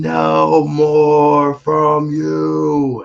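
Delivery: very slow, drawn-out, rasping, rough scream, pitched high. Retelling a vision where a voice screams: imitating a voice screaming. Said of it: "the voice is screaming".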